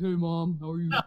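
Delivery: put-on deepened voice. Imitating the oldest son greeting mom: imitating oldest son's deep voice. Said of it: "he's got a deep voice".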